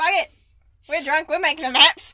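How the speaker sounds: very bad, loud, fake Australian accent. Imagining the mapmakers who named the desert, in a bad Australian accent. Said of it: "That was a very bad Australian accent".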